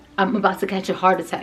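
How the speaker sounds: ordinary talk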